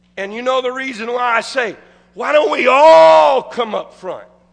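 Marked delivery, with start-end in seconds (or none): 2.2-4.3 heavy stress on "all", preachy tone. Asking why everyone in church doesn't come up front, stress on all. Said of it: "I put emphasis on all".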